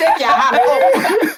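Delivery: laughing mock coach voice, high and slow.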